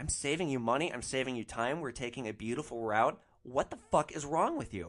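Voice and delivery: plain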